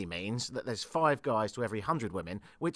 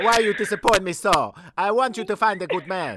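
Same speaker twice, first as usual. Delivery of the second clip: mock Italian accent, much higher, louder; 8 semitones higher, 10 dB louder than usual. Voicing the listener's italian mother, in a mock italian accent. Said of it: "Sorry about the accent".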